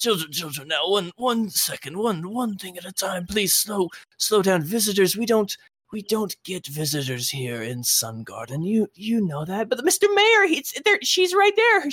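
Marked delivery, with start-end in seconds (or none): 0.0-9.7 put-on old elf voice, slower. Storyteller voicing the elf mayor answering excited children: old elf voice. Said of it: "and you hear this old elf".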